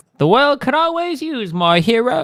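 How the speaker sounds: high, attempted British accent that misses. Trying to get a game character's voice right: Tracer voice. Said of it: "I can't do this accent at all".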